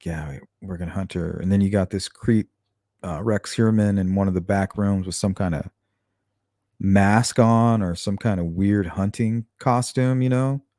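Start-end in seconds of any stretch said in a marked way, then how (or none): 0.1-1.4 soft half-whisper under the breath. Describing what Shannon might have heard, imitating men half-whispering. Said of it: "you can hear 'em kinda whispering".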